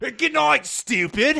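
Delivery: high, loud, fake put-on British accent.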